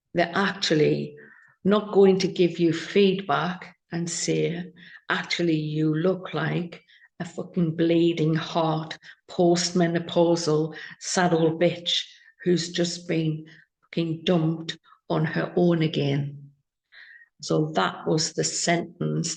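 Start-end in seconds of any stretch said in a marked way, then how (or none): none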